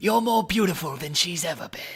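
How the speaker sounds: poorly done creepy, whispery murmur. Talking about the character, attempting a bad Petyr Baelish impression. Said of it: "my Peter Baelish ain't no good".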